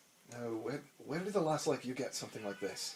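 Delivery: very quiet, suddenly sober voice. Narrator voicing a man whose face falls at what he's shown, very quiet and sober. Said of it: "sobers and goes very quiet".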